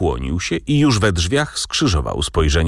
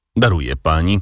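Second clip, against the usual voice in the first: ordinary delivery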